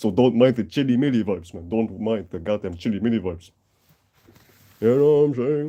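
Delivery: ordinary talk, nothing marked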